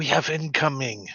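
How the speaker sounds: whispering. Voicing a character in a tabletop game, speaking to another character: whispering. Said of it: "I whisper to her".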